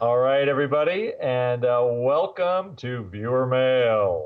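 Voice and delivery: put-on deep baritone, deep bass voice. Podcast host opening the listener mail segment, in a deep baritone voice. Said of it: "I had to get that deep baritone voice".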